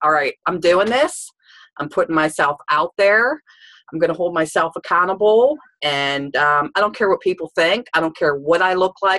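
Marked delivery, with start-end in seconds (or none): none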